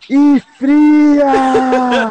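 very high, stretched-out, drawn-out yell. Retelling waking up from fainting and yelling for water: retelling own shout. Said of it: "eu grito".

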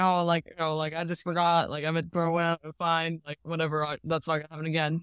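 put-on awkward, embarrassed, brushed-off tone. Retelling a man's excuse after his bottle was found, imitating someone embarrassed. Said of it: "he was all embarrassed about it".

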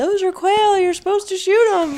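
very high hollered call. Retelling the husband hollering from twenty yards away: imitating a holler. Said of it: "he hollers at me".

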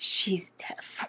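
hushed, breathy whisper under the breath. Imitating the other speaker's line about the niece: imitating a whisper. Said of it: "You're like".

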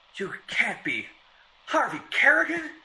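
gasping out the words. Devereux responds to the mocking stranger, gasping. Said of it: "gasped Devereux".

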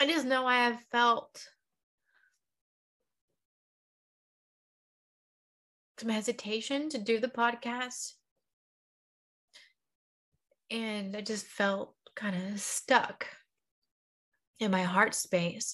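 in tears, crying. A podcast host speaking to her listeners, crying. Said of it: "I don't know why I'm crying".

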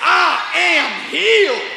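sassy, confident, with plenty of attitude. Leading the congregation in a confession, showing the line: saying it with attitude. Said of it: "Put some attitude on it".

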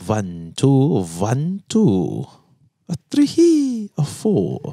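vampire voice with swooping pitch. Trying out a voice with a co-host, in the Count Santos vampire voice. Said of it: "Is that your vampire voice?".

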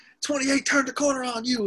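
put-on very high, little Southern twang accent. Retelling what Philip Rivers said to a player: Philip Rivers Southern accent. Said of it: "in his little Southern accent".

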